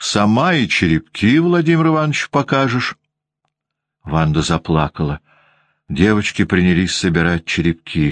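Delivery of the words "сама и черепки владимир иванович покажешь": biting, caustic, pitched-up sarcasm with Сама drawn out. Anna Grigorievna refuses to shield the crying Vanda over the broken cup, speaking caustically. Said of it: "язвительно говорила Анна Григорьевна".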